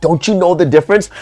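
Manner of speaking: naggy, scolding, nagging tone. Imitating commenters who keep correcting, like a nagging mother: imitating nagging. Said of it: "Just nagging me".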